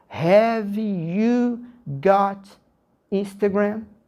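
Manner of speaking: very slow, careful, word-by-word delivery. Contrasting how English is spoken in real life: slow, careful speech. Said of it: "eu vou falar devagarinho".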